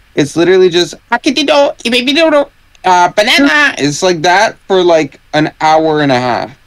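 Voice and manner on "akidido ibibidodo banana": put-on gibberish cartoon voice, higher. Mocking the Minions movie to the others: Minions impression. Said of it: "He complimented my impression".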